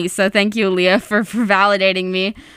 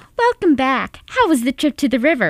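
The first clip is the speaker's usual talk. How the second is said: high socialite voice with swooping pitch; 5 semitones higher than usual. Voicing two characters in a scene, first as Karen: Karen from Will and Grace voice. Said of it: "I'm Karen".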